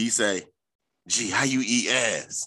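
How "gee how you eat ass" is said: put-on whisper, lower pitch. Retelling what a caller said late at night: imitating someone whispering. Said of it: "So he's whispering and shit".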